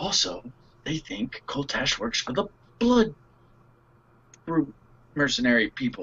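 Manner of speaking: put-on whisper. Playing a character who quietly tells two companions about victims: whispering in character. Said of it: "whisper and tell them".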